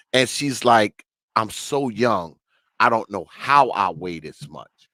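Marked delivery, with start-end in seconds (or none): 1.3-4.6 mock downcast, sorrowful little girl's lamenting voice. Retelling a little girl speaking on a tape, imitating a sad little girl. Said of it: "you can hear the sadness in her voice".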